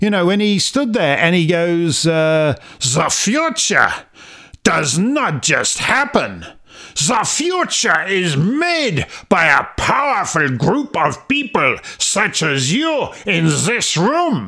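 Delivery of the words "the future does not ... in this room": slow, put-on German accent. Quoting a man's speech to a room of people, in a put-on German accent. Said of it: "You just can't beat that accent".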